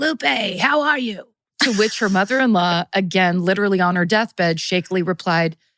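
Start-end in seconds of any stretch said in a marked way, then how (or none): 0.0-1.3 high, rasping smoker's yell. Retelling the sister entering the house: imitating a raspy smoker's yell. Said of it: "stepped into the house and yelled".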